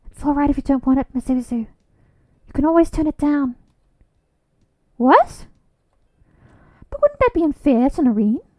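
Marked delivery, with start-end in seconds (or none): 0.1-3.5 mumbling quietly, whispering. Reading a scene aloud, quietly telling Mizuzu he can refuse: whispering. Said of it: "I drop my voice to a whisper".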